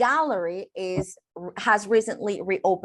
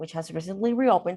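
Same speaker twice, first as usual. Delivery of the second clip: quick throwaway aside, fast and run together; 2 semitones lower than usual. English lesson on a clause that can be omitted, said much faster. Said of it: "So I can pronounce it like faster".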